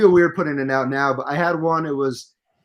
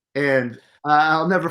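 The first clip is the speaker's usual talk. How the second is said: ordinary talk, nothing marked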